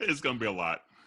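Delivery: emotional, choked-up, catching voice. Talking about the day after with friends, emotional, choked up. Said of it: "I'm getting emotional thinking about it".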